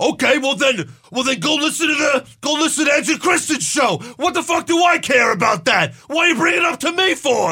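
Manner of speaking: mock mad, high, offended, indignant rant. Retelling a show host's reply to a caller: imitating Taz angry and offended. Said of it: "Taz got so offended and mad".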